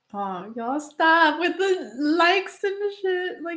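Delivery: crying, tearful, high-pitched speech. Speaking to viewers on camera after sharing news, crying while talking. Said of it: "you're gonna make me cry more".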